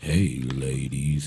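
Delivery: very low, soft, seductive sexy voice. Opening a radio show, the host greets the ladies in a sexy voice. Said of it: "That's my sexy voice".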